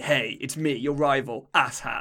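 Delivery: slow, boastful, brimming with pride. Quoting the rival's greeting each time he appears: imitating a proud boast. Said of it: "he says it with such pride".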